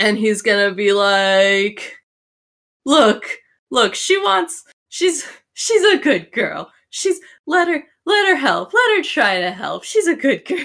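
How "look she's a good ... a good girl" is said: halfling voice bursting out laughing, much higher pitch. Game master voicing a halfling at the table, bursting out laughing. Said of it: "The halfling, who hasn't really commented in the conversation till now, is just, he bursts out laughing. And make me a quick perception check on him so I can tell how much I'm going to tell you about him. Perception".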